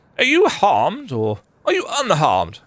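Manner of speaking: put-on posh, courtly knight voice. In a role-play game, the player voices the knight Otis: posh knight voice. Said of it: "That's my posh knight voice".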